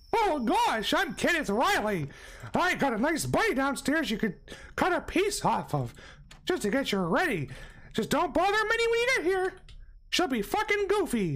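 voice way up, pitch swinging. Speaker mocks someone who just appeared, in a Mickey Mouse voice. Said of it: "you talk in a Mickey Mouse voice".

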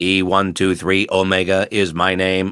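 flat, emotionless robot voice. Recalling how the role was read with no emotion: E-123 Omega robotic monotone. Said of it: "They just had me read in a robotic monotone, which means I was only speaking like this".

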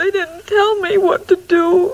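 tearful, weeping, crying through every word. A character, told he is crying, answers while crying. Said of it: "You're crying".

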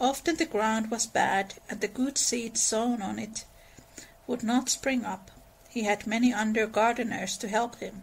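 plain reading voice

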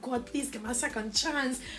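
acted, imploring, begging pleading tone. Retelling praying during a near-death moment: retelling own begging prayer. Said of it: "I was begging, I was pleading".

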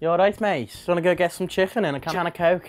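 put-on Scouse Liverpool accent. Trying out accents for the others, the speaker now does a Scouse accent. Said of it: "it's a Scouser".

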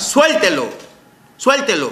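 anguished, high, swooping shout. A father retells what he shouted at a woman, retelling a shout. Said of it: "yo le grité a la señora".

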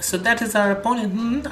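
put-on Spanish accent, very high-pitched. Reading a game character's line again, now in a Spanish accent. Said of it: "I remembered my Spanish accent".

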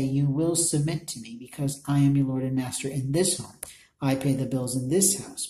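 ordinary delivery

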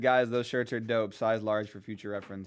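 ordinary delivery

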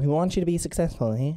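put-on nerdy voice. Echoing another speaker's line to show his accent, nerdy accent imitation. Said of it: "That's the accent I was talking about".

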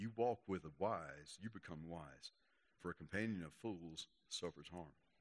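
deliberate word-by-word, very quiet and very slow. Speaker rereading a verse aloud to listeners, reading slowly. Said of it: "Let me read that slow again".

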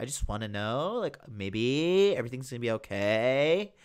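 put-on swaying sing-song Southern California accent, okay drawn out. Mocking how people from south california talk: put-on californian accent, swaying. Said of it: "That's how they talk, like that swaying intonation".

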